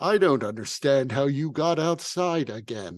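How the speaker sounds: fire spirit character voice. The Ifrit chimes in as the group gets closer; booming Ifrit voice. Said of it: "the Ifrit chimes in in a booming voice".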